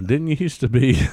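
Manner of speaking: high, loud, mocking called-out voice.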